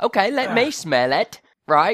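put-on English accent. Trying out an English accent for a story: English accent. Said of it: "I've actually got an English accent for this week".

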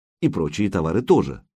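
plain reading voice

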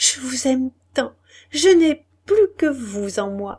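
faltering, stammering speech. A woman speaks to her lover while covering his face with kisses, stammering. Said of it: "elle balbutiait en couvrant son visage de baisers".

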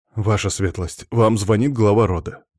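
plain reading voice

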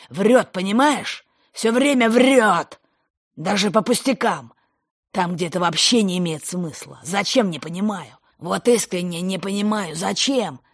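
near shout. A father turns to a woman while talking about his son: almost shouting. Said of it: "Он почти перешел на крик".

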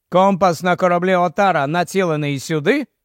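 plain reading voice

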